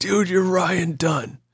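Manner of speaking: put-on drunk bro voice. Retelling a guy who wouldn't leave him alone, in a put-on drunk bro voice. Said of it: "I like your drunk bro voice".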